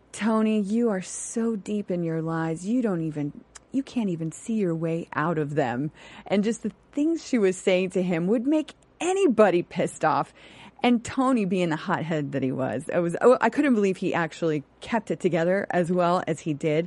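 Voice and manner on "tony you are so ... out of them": put-on calm, passive-aggressive voice. Retelling what Cass said to Tony: imitating Cass, calm and passive aggressive. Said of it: "the passive aggressive, like".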